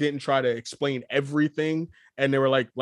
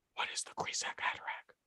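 mock whispering, quieter. Imitating a film character's inner thoughts, mock whispering. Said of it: "Why are you whispering?".

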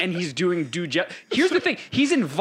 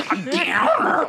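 mocking, stupid put-on Midwest accent, pitched up; 9 semitones higher than usual. Mocking how a friend calls the speaker a downer: imitating a stupid Midwest accent. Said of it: "she said it with her stupid Midwest accent".

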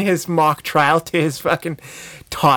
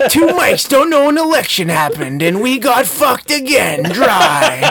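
cheesy, loud, pitched-up adventure movie trailer narration; 8 semitones higher, 5 dB louder than usual. Doing an impersonation bit about the two mics, shitty adventure movie narrator voice. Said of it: "I'm a narrator narrating a shitty adventure movie".

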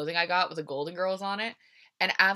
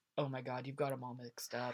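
deadpan, low, flat, hushed, barely-there monotone; 6 semitones lower, 12 dB quieter than usual. Retelling what her mom said in the car, mimicking mom's flat monotone. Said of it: "my mom just monotone".

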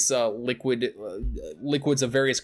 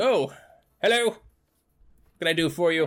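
small, higher-pitched little gnome character voice; 2 semitones higher than usual. A storyteller voices a small character greeting a visitor and offering help. Little gnome man voice. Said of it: "you see a little gnome man".

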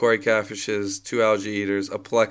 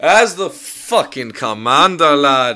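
very loud, put-on Irish brogue; 4 semitones higher, 8 dB louder than usual. Claiming the rank of commander in a group bit, fake Irish accent. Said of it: "You're not Irish at all".

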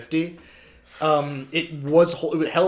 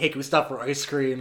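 ordinary talk, nothing marked

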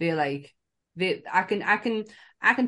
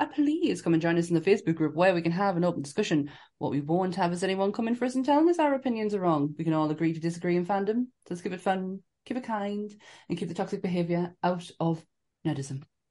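plummy, posh-sounding delivery. Closing an episode, a host speaks to listeners in a posh voice. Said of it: "Sam's posh voice comes out again there".

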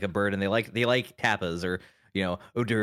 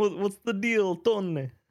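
put-on Italian accent, pitched way up; 12 semitones higher than usual. Joking with friends, addressing tony: italian accent impression. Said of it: "That's my Italian impression".

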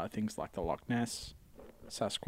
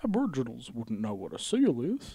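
put-on old man voice, loud, swooping; 5 dB louder than usual.

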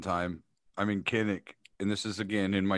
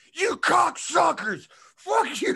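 mock top-of-lungs shriek, very high and drawn-out; 6 dB louder than usual. Speaker retells screaming at the refs in public; retelling a scream. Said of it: "I'm screaming at the top of my lungs in public".

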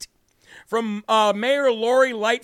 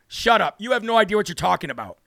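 ordinary delivery

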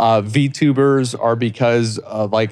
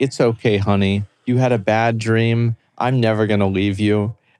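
put-on whisper in a girl's voice; 2 semitones lower than usual. Retelling an ASMR video clip, imitating a girl whispering. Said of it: "this girl whispering into the microphone".

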